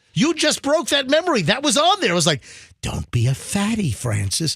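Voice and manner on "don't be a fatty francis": eerie, slow, drawn-out hypnotist voice. Speaker recalls a weight loss hypnosis video: creepy hypnotist voice. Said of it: "like creepy hypnotist voice".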